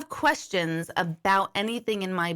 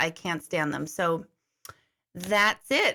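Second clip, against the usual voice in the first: usual speaking voice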